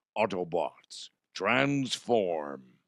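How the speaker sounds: hoarse, put-on hero voice. Joking about a shredded voice, doing an Optimus Prime voice. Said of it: "I could also sound like Optimus Prime".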